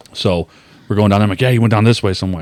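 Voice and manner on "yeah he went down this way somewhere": usual speaking voice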